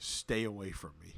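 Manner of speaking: ordinary talk, nothing marked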